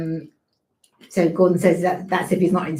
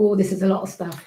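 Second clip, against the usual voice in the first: ordinary delivery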